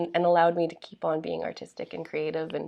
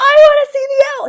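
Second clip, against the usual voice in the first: very loud, very high, shrill upset outburst; 17 dB louder than usual. Retelling how Nella got upset about the owl: imitating Nella, upset and really loud. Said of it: "She's really loud".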